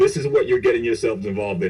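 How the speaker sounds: usual speaking voice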